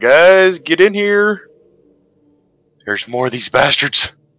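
high-pitched yelling. In character, turning to yell back through the door to the guys: yelling. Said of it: "turn around and yell back through the door".

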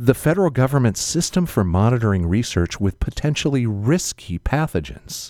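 low newsreader-style radio announcer voice. Host reading a government description aloud to listeners; NPR voice. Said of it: "I love it when you go to your NPR voice".

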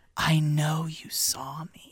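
very slow, drawn-out, hushed whisper. Retelling what a character says to him: imitating a whisper. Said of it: "She just whispers".

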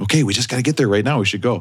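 put-on whispering voice. Describing Russ trying not to get mad on the way: imitating Russ whispering. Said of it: "He's whispering".

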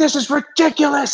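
mock yelling, pitched very high. Retelling being sent the wrong way near a finish line, retelling a yell. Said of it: "I'm like yelling 2 days in a row".

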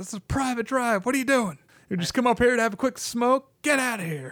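mock, very high, shrill confrontational yelling. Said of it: "just yelling at them".

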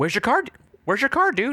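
very high-pitched, manic dude voice. Trying out an impression for the others: imitating Sean William Scott, a little high. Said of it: "I'm gonna work on it".

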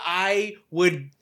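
ordinary talk

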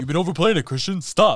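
acted low masculine voice. Retelling what another speaker kept saying to him, in a put-on deep manly voice. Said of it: "His voice is not that deep".

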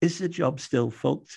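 feeble, faint little voice. Telling a story, quoting a man who beckoned a policewoman close, retelling a faint voice. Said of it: "He says in a faint voice".

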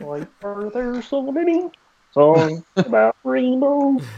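put-on frog puppet character voice. As the group all agree to do their voices, the speaker tries a Muppet frog voice. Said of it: "Let's all do our voices".

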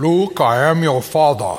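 put-on booming impression voice.

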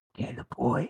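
very raspy, wispy, whispery ghost voice. Retelling a ghost story, a voice calling from downstairs: very raspy wispy voice. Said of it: "in a very raspy".

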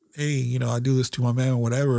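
ordinary talk

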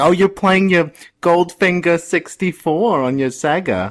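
high-pitched motherly voice. Mimicking how another speaker sounds talking about video games: imitating a mom. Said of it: "sounds like my mom when he's talking about video games".

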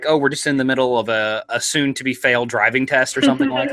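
ordinary delivery

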